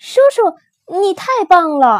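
tearful, joyful, high shout through sobs. Calling out to the uncle who picked red fruit; sobbing, happily shouting. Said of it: "抽抽搭搭高兴的喊道".

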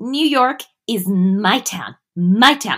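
very slow, drawn-out, savoured grand delivery. Retelling a scene where a character brags about a city: imitating Veronica. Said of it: "And then she's all like".

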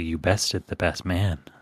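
solemn, grave, utterly earnest tone. Acting out a guest announcing the best man's defeat: very serious. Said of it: "says very seriously".

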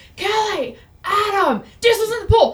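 very high, shrill calling-out shout. Recounting opening the door and seeing the dog in the pool, retelling a yell. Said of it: "And I start yelling".

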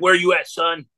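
really scratchy, scraped-out voice. Retelling a sudden phone call from John McAfee, scratchy John McAfee voice. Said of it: "It's this really scratchy voice".

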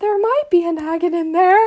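pitiful tiny voice. Speaker retells answering a man searching their bag, retelling a pathetic little voice. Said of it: "Like the most pathetic little voice I've ever heard".

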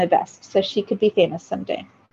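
ordinary delivery

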